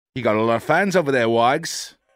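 clumsy, bad put-on Australian accent. Calling out to a friend in a bad australian accent. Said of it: "The fuck accent was that? / Australian".

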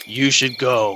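deep, low, put-on demonic possessed voice. Retelling what a possessed man said to a woman, deep, low demonic voice. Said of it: "some kind of like deep, low demonic voice".

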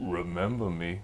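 very low, hushed, chilling menacing tone. Retelling a customer who left without his comic: imitating a menacing customer. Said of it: "looks me dead in the eyes, lowers his sunglasses and goes".

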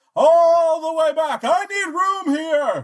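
very high, slow, loud yelling. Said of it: "you don't need to yell".

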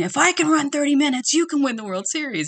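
very high-pitched yell, screaming. Recalling a treadmill run during the Cardinals' World Series, retelling screaming at the TV. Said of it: "I'm screaming at the TV going".

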